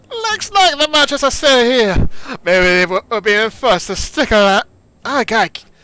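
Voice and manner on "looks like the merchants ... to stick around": put-on Jamaican accent. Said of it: "it's like to that Jamaican accent, the stereotype one".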